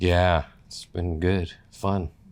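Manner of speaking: dry, ironic, sarcastic tone. Guest answering the podcast host's introduction, sarcastic. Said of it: "sense a little bit of sarcasm there".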